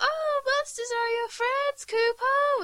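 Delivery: put-on very high, slow, eerie, creepy little-girl voice. Mocking how it says Kupo, the speaker imitates a creepy little girl voice. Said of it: "it's like the little girl voice saying it".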